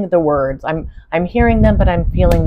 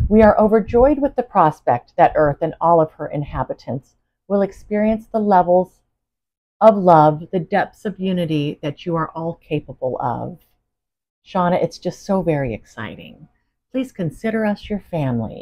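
ordinary talk

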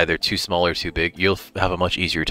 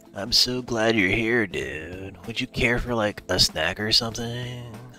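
very stoned, spaced-out, drugged-up hippie voice; 4 semitones higher, 5 dB quieter than usual. Giving a character a voice while welcoming visitors, hippie drugged-up voice. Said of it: "give him a very hippie, like, kind of drugged up voice".

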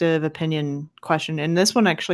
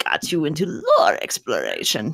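odd put-on witch voice, weird and swooping. Host asking the guest a question, weird witchy voice. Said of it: "Now I'm just going weird witchy voice".

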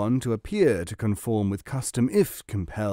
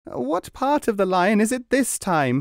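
crying out in pain, very high pitch; 10 semitones higher than usual. A client being tattooed calls out to the tattooist, crying out. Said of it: "he cried".

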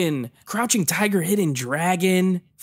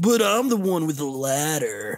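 laid-back surfer-dude voice; 2 semitones lower than usual. Describing a guy in a movie and quoting his line, surfer-dude Yamcha impression. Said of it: "why does he talk like this?".

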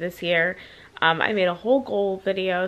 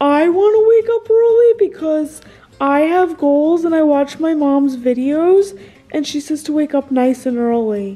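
goofy talking-dog voice, very loud and high; 8 semitones higher, 10 dB louder than usual. Asked about waking up early, the dog answers: Wyatt dog voice. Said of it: "you guys said you're really liking the dog voices".

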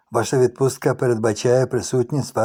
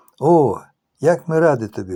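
sincere, genuinely smiling voice; 3 semitones higher, 3 dB louder than usual. Narrator reading a wife greeting her husband returning home, with a sincere smile. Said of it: "з щирою посмішкою".

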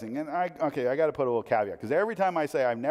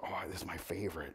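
put-on hushed voice, much quieter; 7 semitones lower, 13 dB quieter than usual. Retelling him accepting a treat so mom and dad won't know, retelling a super quiet reply. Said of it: "he's being super quiet".

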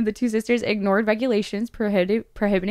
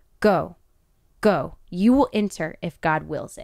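weighty, deliberate, syllable-by-syllable, every syllable stressed; 3 semitones lower than usual. Retelling how the Pope answered her, the speaker is stressing each syllable. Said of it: "stressing each syllable".

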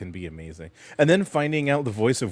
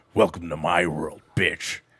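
hollow, creepy voice; 3 semitones lower than usual. Talking about voices that gave people nightmares, the speaker does a Freddy voice. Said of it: "I know you know how to do it".

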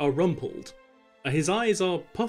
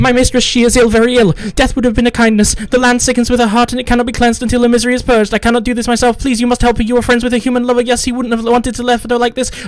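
nonstop rush, much higher, louder, no pauses; 8 semitones higher, 15 dB louder than usual. A servant who flew out to confront the group speaks extremely rapid, unbroken, brooking no interruption. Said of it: "he is a waifishly thin humanoid with gossamer wings, large expressive eyes, long pointed ears, and a diminutive 2-foot-tall".

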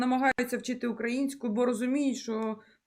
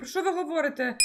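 normal talking voice

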